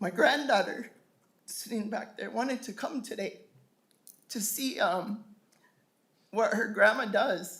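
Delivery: emotional voice, close to tears.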